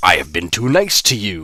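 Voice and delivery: heavy, menacing blob monster voice. Reading a story aloud, voicing the creature's line in a booming creature voice. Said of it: "the creature boomed".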